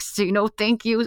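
slow hiss through clenched teeth, locked jaw. Retelling prompting children in public, imitating talking through clenched teeth. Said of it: "with my teeth clenched".

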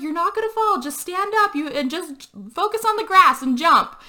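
urgent, high-pitched yelling. Retelling a woman yelling up to a man, retelling a yell. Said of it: "she's yelling up to him".

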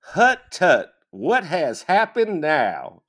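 put-on grandmother's accent. Retelling a story, the speaker has the witch reply in a grandmother's accent. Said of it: "replied with his grandmother's accent".

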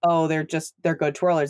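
normal talking voice

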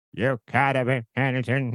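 put-on old Southern man voice, Alabama accent. Describing a kid in a story, doing his line in an old Alabama man's voice. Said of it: "like an old man's voice from Alabama".

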